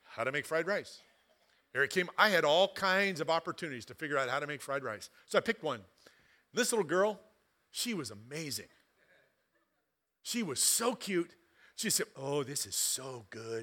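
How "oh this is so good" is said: put-on Chinese accent, very low pitch, very slow pace. Retelling a girl's words from a YouTube fried rice video, Chinese accent. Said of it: "with this wonderful Chinese accent".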